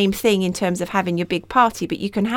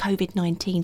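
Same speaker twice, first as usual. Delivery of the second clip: whispered, quieter; 6 dB quieter than usual. Naming a topic the podcast had avoided covering: whispering. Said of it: "I've just whispered it".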